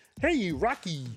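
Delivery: high cartoon moose voice. Saying everybody can do this one, Bullwinkle voice. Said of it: "everybody can do Bullwinkle voice".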